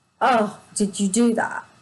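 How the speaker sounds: contemptuous, scornful tone. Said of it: "That tone".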